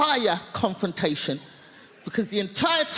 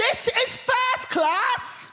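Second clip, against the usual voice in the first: put-on very high, shrill, drawn-out shout at top of voice. Recounting a woman in a first-class carriage shouting at them: retelling a woman's shout. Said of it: "at the top of her voice, she shouts".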